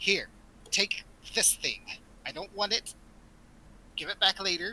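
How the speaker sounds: goblin creature character voice. Voicing a goblin handing an item to a player: goblin voice. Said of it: "She goes".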